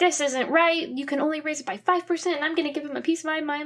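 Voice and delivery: high, flipped-out, angry, yelling rant. Retelling a drama scene where a character flips out about rent: imitating someone yelling. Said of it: "flips out and starts yelling".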